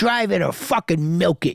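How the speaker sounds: hard-nosed, tough-guy mobster delivery. Retelling a man reacting to being cut off while driving: mafioso tough-guy impression. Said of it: "like a true fucking mafioso tough guy, he goes".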